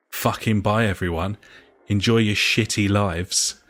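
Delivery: imitated under-the-breath muttering. Retelling what a man in the pub said: imitating a muttered insult. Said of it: "this is under his breath".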